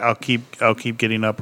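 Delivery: ordinary delivery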